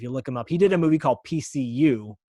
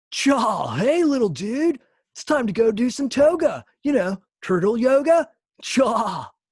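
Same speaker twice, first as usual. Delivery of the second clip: loud, very high, laid-back surfer voice; 11 semitones higher, 5 dB louder than usual. A voice actor gives a sample of a character voice they nailed, Crush voice. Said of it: "I'll give you a little bit of Crush".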